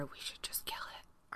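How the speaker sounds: very quiet, barely voiced whisper. In a tabletop game, a player's character speaks to another character, whispering. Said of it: "So I whisper to Amira".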